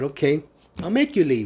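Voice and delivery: ordinary talk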